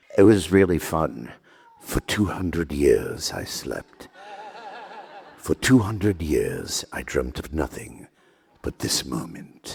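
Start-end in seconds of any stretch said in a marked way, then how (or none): 1.8-9.8 low, standard British received pronunciation. Describing the accent settled on for a role, then performing it; standard british rp accent. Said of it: "settled on kind of a standard British received pronunciation".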